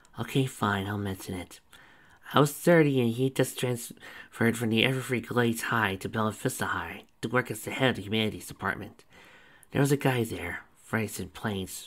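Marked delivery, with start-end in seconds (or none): none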